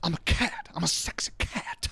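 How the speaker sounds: very slow movie-star voice, every word stretched way out. Doing an impression after being asked for one: Nick Cage impression. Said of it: "That's my Nick Cage".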